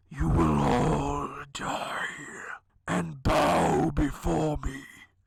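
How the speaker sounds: hushed, dark whispering voice. A game master voices a voice whispering in the players' minds, dark whisper. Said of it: "A dark voice ... And it whispers".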